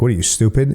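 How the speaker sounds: ordinary delivery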